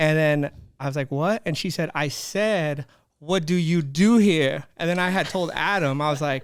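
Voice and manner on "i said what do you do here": put-on loud, attitude-filled Bronx accent. Retelling a kid who bullied the speaker in the hallway: Serena's Bronx attitude accent. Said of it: "Like in her Bronx attitude accent".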